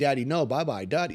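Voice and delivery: put-on child yelling. Retelling how his son yelled while the cast was put on: imitating a child yelling. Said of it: "yelling at me".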